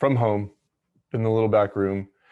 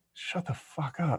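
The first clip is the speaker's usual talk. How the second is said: hushed, breathy whispered grumble under the breath; 5 semitones higher, 10 dB quieter than usual. Retelling own annoyed mutter at noisy neighbor kids: retelling a muttered whisper. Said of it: "just a higher tone than a whisper".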